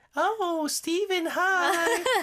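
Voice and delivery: put-on sugary, cutesy, very high-pitched girly voice. Speaker acts out a pretty girl greeting viewers, imitating a girl's voice. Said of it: "I'm trying to be sound like a girl".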